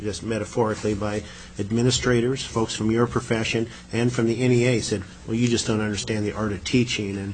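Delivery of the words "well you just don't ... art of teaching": ordinary talk, nothing marked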